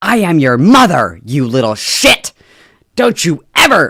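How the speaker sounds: put-on loud, shrill furious shouting. Playing an angry mother scolding her child: mock furious mother yelling. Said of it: "crashing out".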